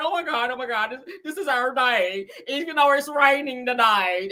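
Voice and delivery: slow, weepy, crying speech in country-bumpkin voice. Retelling Kimmy crying in the room before her wedding, imitating Kimmy crying. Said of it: "sitting back there in the room crying".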